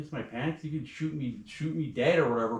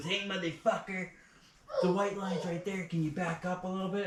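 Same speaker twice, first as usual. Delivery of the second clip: put-on rude, mouthy, pitched-up jeering kid voice; 7 semitones higher than usual. Retelling what a young guy said during a confrontation: imitating the kid's rude taunt. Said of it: "And he goes".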